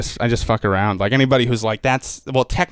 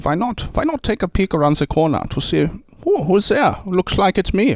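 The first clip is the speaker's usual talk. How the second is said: put-on German-accented English, pitched up; 8 semitones higher than usual. Speaker demonstrating different accents, moving on to a german accent. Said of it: "then you could go to Germany as well".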